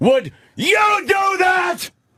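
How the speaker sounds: put-on lawyer voice, high-pitched, yelling. Speaker describing how lawyers address the jury, imitating a lawyer yelling. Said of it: "And they yell".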